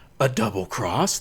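loud, high, dramatic TV announcer voice. Describing a show's hilarious announcer, in the announcer voice. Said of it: "That's the announcer's voice".

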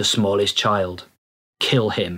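mechanical, robotic, entranced, mind-controlled voice. Quoting a mind-controlled character's line from the subtitled version, robotic, mind-controlled voice. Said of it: "in a robotic, mind-controlled voice".

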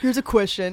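put-on sarcastic voice. Imitating family members asking joke questions: imitating sarcastic family members. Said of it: "They're gonna be so sarcastic".

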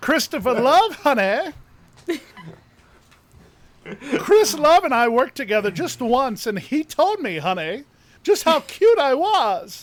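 loud, high-pitched drag queen voice. Doing an impersonation for the other speakers: Chris Love impression. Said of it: "a pretty good Chris Love impersonation".

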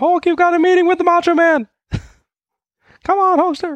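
very high, loud yell like through a megaphone. Joking about how a wrestler's manager schedules meetings: imitating Jimmy Hart yelling. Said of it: "Yells in his Hulkaphone".

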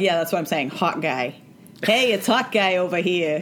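thick, pronounced put-on Brooklyn New York accent. Acting out people answering a man who corrects them, thick brooklyn accent. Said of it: "their very pronounced, like, Brooklyn accent".

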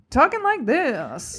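put-on old-timey 1950s newsreel-style dialect voice. Trying to name an old dialect, demonstrating talking in a 1950s dialect voice. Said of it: "Like that 1950s".

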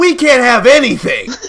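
very high-pitched, very loud, piercing shrill scream. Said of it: "she screamed".

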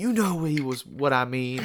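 super intense interviewer voice. Recounting a meme made from Wilder's interview, doing Wilder's super intense voice. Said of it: "in his like super intense voice".

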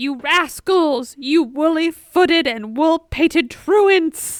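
mock sassy, fed-up, loud scolding shout. Speaker acts out a quoted insult they love: retelling a yell. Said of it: "he yells".

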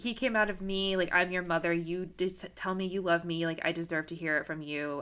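ordinary delivery

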